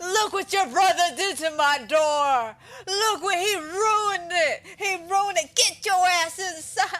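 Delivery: put-on furious tirade. Quoting a favorite line of a man upset over his screen door, retelling a furious yell. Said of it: "this man's just having a fucking freak out".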